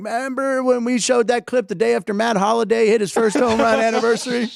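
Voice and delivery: high, fake country twang accent. Picturing a future show and quoting a line: put-on country accent. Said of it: "adopted a country accent?".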